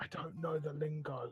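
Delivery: hushed half-whispered aside. Half-whispering in character behind a hand to the party at a bar: half-whispering behind a hand. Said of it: "just whisper".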